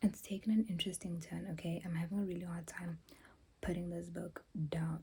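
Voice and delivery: soft, hushed whisper.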